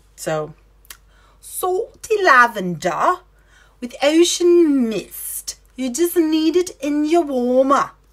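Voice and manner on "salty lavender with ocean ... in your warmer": New Zealand accent, R's turned to ah, rising at the end. Recommending a scent for the warmer in a Kiwi accent. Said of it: "That was my Kiwi".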